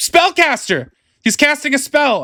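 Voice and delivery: scared and loud. Game narrator voicing a character at the table, in a frightened, raised voice. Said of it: "distinct and raised, and seems a bit more frightened".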